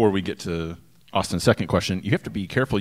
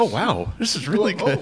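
startled, very high-pitched, surprised cry; 10 semitones higher than usual. Imitating another taster's reaction to the beer: imitating a surprised voice. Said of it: "There was surprise in his voice".

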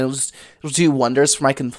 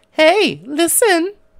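put-on fairy voice, higher. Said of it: "You guys are like Navi".

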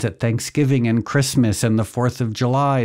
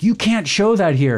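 loud, high-pitched screaming; 8 semitones higher than usual. Retelling police screaming at an activist outside a butcher shop, imitating police screaming. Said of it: "screaming at him like".

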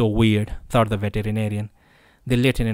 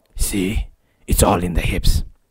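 slow grunting through clenched, gritted teeth; 3 semitones lower than usual. A lieutenant demonstrates a bat swing to a beginner, grunting through clenched teeth. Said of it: "he grunted through the clenched teeth".

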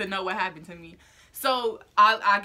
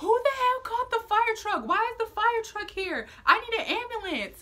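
mock shrill, angry, frantic screaming, very high-pitched; 13 semitones higher than usual. Retelling lying with broken legs, yelling about who called the fire truck: retelling a scream. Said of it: "I'm just screaming to scream at this point".

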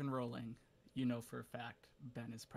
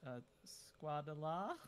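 half-hearted, tentative, deflated, lacking enthusiasm; 4 semitones higher than usual. Voicing a character who starts the flying carpet: less enthusiastic. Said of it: "a little less enthusiasm in his voice".

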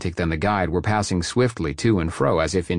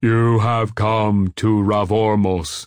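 slow, ominous, portentous booming voice; 3 semitones higher, 4 dB louder than usual. A guide who overheard him speaks up, booming portentously. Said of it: "he boomed portentously".

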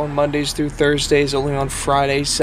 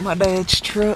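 fake American Southern accent; 4 semitones higher than usual. Vlogging about cleaning out dad's truck, repeating the phrase in a put-on southern accent. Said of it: "Gotta say that one with the southern accent".

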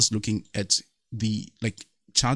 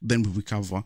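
plain

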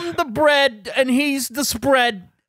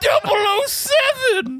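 put-on British accent, pitched higher; 8 semitones higher than usual. Doing another impression of Gavin Free for the others: Gavin Free impression. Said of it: "That's what you sound like to him?".

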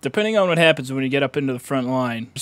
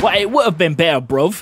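put-on London accent, higher pitch; 4 semitones higher, 4 dB louder than usual. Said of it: "you a Londoner?".

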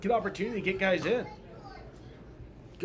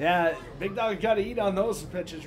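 ordinary delivery

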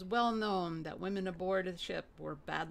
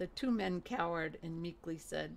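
plain reading voice

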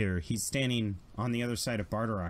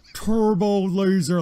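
high scream, blaring like a loudspeaker; 10 semitones higher, 9 dB louder than usual. Narrating a scene as his amplified voice modulator blares: screaming like a pa. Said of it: "So he screams".

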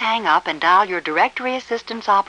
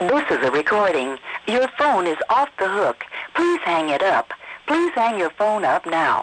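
gentler, edge-free Southern voice at steady pace. Showing how a phone recording would be voiced for the South: softened phone-recording voice for the South. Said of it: "take the edge off the voice and soften the quality".

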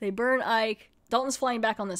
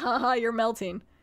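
put-on laughing villain voice. Retelling a scene where Dalton sits smoking a cigarette: imitating Dalton laughing. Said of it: "Dalton's still just like".

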